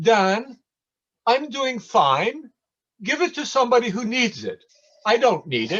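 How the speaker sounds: put-on very high-pitched British Indian accent. Speaker quotes a man's reply to him, in a British Indian accent. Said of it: "in his British Indian accent".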